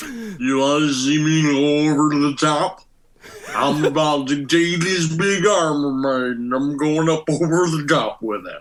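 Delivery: very low, drugged-out, sedated-sounding delivery. Joking about a truck driver who drives to an arm wrestling contest: Sylvester Stallone on Quaaludes. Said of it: "That's Sylvester Stallone on Quaaludes".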